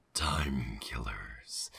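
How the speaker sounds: very low, deep, put-on demon voice. Announcing a show segment called time killers: demon voice. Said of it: "I did my demon voice".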